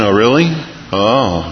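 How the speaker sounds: feigned, put-on interested voice. Speaker showing how she answers someone who calls with a need; fake interested voice. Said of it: "put on the interested voice".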